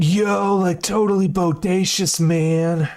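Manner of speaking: high-pitched beach surfer talk. Asked to do a surfer dude, the speaker answers in a surfer dude voice. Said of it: "Do a surfer dude?".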